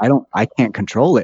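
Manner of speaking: ordinary talk, nothing marked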